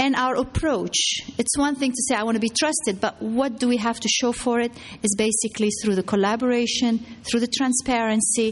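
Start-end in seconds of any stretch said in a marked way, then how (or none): none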